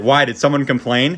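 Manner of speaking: ordinary talk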